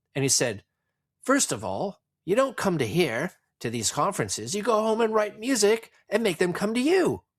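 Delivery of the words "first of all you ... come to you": very high, swooping, terrible put-on English accent. Retelling what a man said to his brother at a conference: terrible english accent imitation. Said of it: "in my terrible imitation of his English accent".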